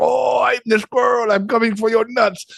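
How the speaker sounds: put-on Japanese accent. Recalling the voice given to a pet squirrel, Freddy the squirrel's Japanese accent. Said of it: "I made him a kamikaze pilot from Japan".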